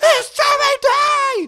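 screaming at top of lungs. Retelling an audition heard from the waiting room: imitating Kevin Tinkin screaming. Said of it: "just screaming at the top".

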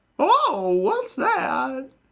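put-on very high-pitched elderly woman voice. Mid-conversation, slipping into an artificial old lady voice. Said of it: "Old lady [name] voice".

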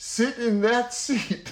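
loud, slow voice. Quoting the speaker's wife pointing to a seat at a round table, in a loud voice. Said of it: "she says in a loud voice to me".

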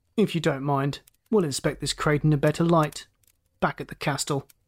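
plain reading voice

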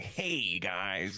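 ordinary Wisconsin accent. Imagining Shrek voiced without the Scottish accent: Shrek in a Wisconsin accent. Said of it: "just kind of like just Wisconsin, kind of the accent".

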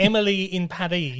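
French pronunciation of Paris. Correcting a show title's pronunciation, with a french accent on paris. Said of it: "It's actually supposed to be pronounced in a French accent so that it rhymes".

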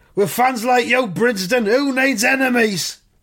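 high, shouted, yelled delivery. Reading a comic aloud, the player shouts back at the fan: shouting. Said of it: "Race shouts".

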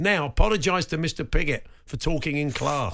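normal talking voice

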